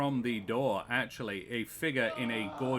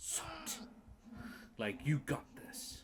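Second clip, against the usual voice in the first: very quiet, close, breathy whisper; 12 semitones higher, 10 dB quieter than usual. Voicing a character encouraging a player who clutches onto them: whispering in someone's ear. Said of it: "Soot just whispers in your ear".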